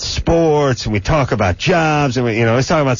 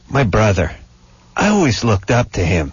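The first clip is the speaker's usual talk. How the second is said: put-on distressed kid voice; 4 semitones lower than usual. Describing a PSA heard on the drive in, quoting the kid in a 17-year-old kid's voice. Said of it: "some 17-year-old kid's voice, and he goes".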